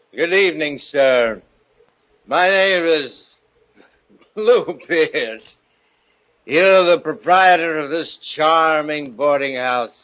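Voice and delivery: put-on slurring, tipsy, drunk politeness. Radio drama: Bluebeard introduces himself to the boarding house owner, sounding drunk. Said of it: "You're drunk".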